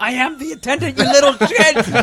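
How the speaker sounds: acted-out scream, very high and loud. The speaker acts out herself screaming at someone: retelling own screaming. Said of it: "it's me screaming".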